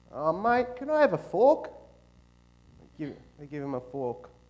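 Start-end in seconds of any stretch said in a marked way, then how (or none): 0.1-1.7 put-on Australian accent, higher pitch. Telling a joke, the speaker voices the Australian character in an Australian accent.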